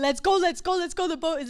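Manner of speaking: light, acted-out calling voice. Retelling hurrying people out of an ice cream shop: imitating her own yelling. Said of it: "they heard me yelling to everyone".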